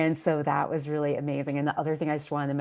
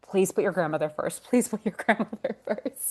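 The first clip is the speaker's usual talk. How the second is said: motherly voice, pitched high; 5 semitones higher than usual. Quoting a mother's voice heard in the head: imitating mom's voice. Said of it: "I can hear my mom's voice in my head".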